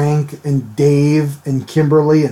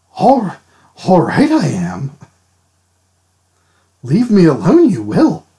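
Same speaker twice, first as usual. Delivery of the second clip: mock drunk character voice with put-on slur; 3 semitones higher than usual. Joking about how Yoda talks when drunk: drunk Yoda voice, put-on slur. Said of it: "he rearranges his words in a drunken slur".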